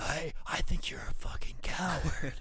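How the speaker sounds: rasping on the breath. Acting out Pillman's line in a story: raspy Pillman voice. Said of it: "all raspy voice".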